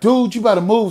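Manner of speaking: loud, high-pitched mock talk. Recounting telling a man he had better move, retelling talking loud. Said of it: "So I'm like talking loud".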